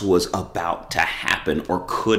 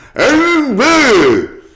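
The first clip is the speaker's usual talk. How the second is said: mouth crammed full, very high and loud; 12 dB louder than usual. Retelling a man answering a radio station's question, imitating talking with mouth full. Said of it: "he's got the sandwich in his mouth, and he goes".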